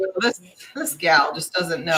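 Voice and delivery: ordinary talk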